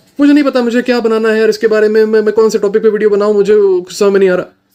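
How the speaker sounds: very high, rushed, stressed rambling delivery. Showing how guys in emergency mode talk: mock-stressed, rushed. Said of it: "मैं एकदम stress में हूँ, एकदम जल्दी में हूँ".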